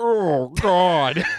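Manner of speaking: loud, high moan. Joking with another speaker about vocalization, mock orgasm moan. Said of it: "doing impressions of the female orgasm".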